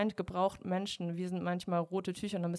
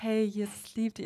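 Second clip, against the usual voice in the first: gentle, meek, mild, sweet-natured delivery; 3 semitones higher, 3 dB louder than usual. Showing the voice the speaker automatically slips into for videos, gentle, meek voice. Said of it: "ich komme dann schon in so eine sanftmütige Stimme. Also so".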